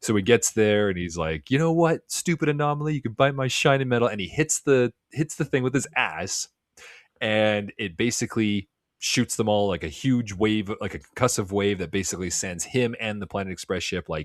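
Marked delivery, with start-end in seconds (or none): 1.5-4.1 pissed-off, dismissive, irritated, higher-pitched. Retelling how an annoyed Bender insults the anomaly: imitating an annoyed Bender. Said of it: "he's pissed off at Fry".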